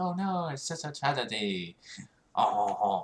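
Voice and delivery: put-on French accent. Imitating people reacting to the Notre Dame news: French accent. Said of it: "There's my French accent for you".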